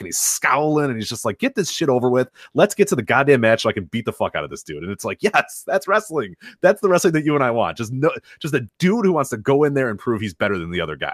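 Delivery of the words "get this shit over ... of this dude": plain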